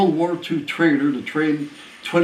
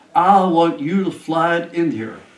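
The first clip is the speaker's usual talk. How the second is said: mock soft Southern drawl; 2 semitones higher, 3 dB louder than usual. Retelling what an old man said on entering the office: imitating a soft southern drawl. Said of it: "And a real nice Southern drawl".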